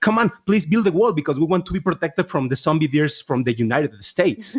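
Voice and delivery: normal talking voice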